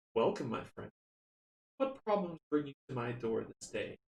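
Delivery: firm, steady, strong and composed voice. Narrating a story where the alchemist speaks to a visitor, strong, calm voice. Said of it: "he says in a strong voice, strong, calm voice".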